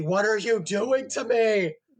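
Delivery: loud, high-pitched, exasperated, frustrated scream of disbelief. Recalling a defender's blunder during a hockey game, retell screaming at the TV. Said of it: "And I'm screaming at the TV".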